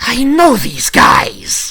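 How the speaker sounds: loud, very high, shrill feminine hissing creature voice. A creature whose eye finds the party speaks, in a feminine hissing creature voice. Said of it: "a somewhat feminine hiss in common going".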